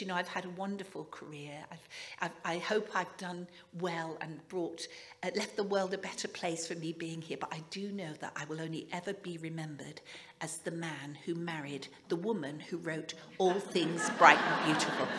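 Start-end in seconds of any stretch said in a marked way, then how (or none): none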